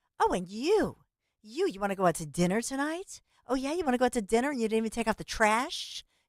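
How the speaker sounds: mock snippy, sassy, nagging jabs. Acting out how a difficult woman talks: imitating a snippy, sassy woman. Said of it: "it's that tone. Little snippy, snippy, sassy".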